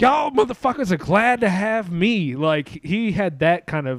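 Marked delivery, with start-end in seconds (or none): 0.0-2.3 cocky, swaggering voice, pitched higher. Describing Patrice's swagger to the other hosts, doing a Patrice impression. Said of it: "I'm sorry for the voice".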